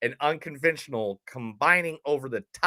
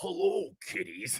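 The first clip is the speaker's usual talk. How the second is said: breathy, hushed slasher villain voice; 3 semitones lower, 7 dB quieter than usual. Recalling dressing up with a full glove and hat while in a band, Freddy Krueger voice. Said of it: "I always like talk like this".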